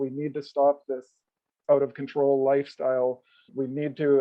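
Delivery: acted, half-begging, urging, almost pleading tone. Retelling what an ex-wife once said: imitating almost pleading. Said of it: "almost pleading".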